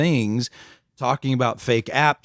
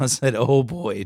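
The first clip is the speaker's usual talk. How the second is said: ordinary talk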